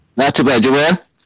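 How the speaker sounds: booming, speaker-blasting, very loud, high voice. A caller answering the host's greeting on the show, very loud voice. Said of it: "Your voice is very, very, very loud".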